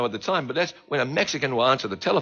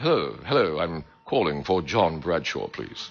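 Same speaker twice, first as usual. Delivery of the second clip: delightful put-on British accent, low and slow; 8 semitones lower than usual. Retelling a caller's phone greeting, in a delightfully British accent. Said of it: "a man with a delightfully British accent called me".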